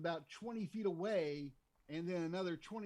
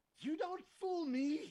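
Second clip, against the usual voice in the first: very high, slow, fed-up exasperated voice; 11 semitones higher than usual. Voicing a character who points and accuses a player: exasperated. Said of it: "kind of exasperated".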